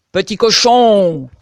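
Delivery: huge, very loud, booming big wolf bellow. Reading a fairy tale, the hungry wolf calls to the first little pig: big wolf voice. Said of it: "cria-t-il de sa grosse voix".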